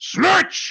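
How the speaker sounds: in-character yelling. Playing a character calling a companion to leave: yelling as Knox. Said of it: "he just sort of yells".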